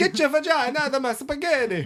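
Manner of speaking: mock exaggerated Italian accent. Teasing the other speaker about their trip to italy, in an exaggerated italian accent. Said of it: "Talking like this".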